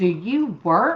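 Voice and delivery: scornful, contemptuous tone of disdain. Retelling how a man asked 'Do you work?': imitating contemptuous tone. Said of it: "He said it in a way like, ... like I was just the scum of the earth".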